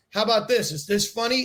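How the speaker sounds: plain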